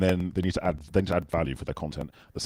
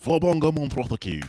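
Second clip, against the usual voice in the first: put-on Mancunian accent, much higher pitch, much louder; 9 semitones higher, 4 dB louder than usual. Retelling how Nick made up a name for the show, imitating Nick's Mancunian accent. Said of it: "in his Mancunian accent".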